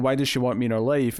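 ordinary talk

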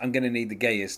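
mumbled, indistinct, half-swallowed line. Retelling a TV scene where a man asks Siri: imitating a mumbled line. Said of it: "in a kind of mumbly way".

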